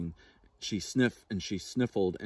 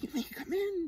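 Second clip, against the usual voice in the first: hushed, very high-pitched half-whisper; 4 dB quieter than usual. Narrator reads the hare's reply to the squirrel beside the sleeping bear, half-whispered. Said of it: "whispered the hare".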